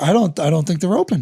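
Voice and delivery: ordinary talk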